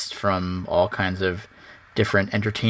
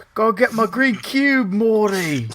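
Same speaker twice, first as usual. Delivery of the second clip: very high, terrible put-on Cockney accent; 12 semitones higher, 3 dB louder than usual. Saying a joke line in a put-on voice: terrible put-on Cockney-sounding accent. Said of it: "That sounded Cockney".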